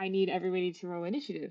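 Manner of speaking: plain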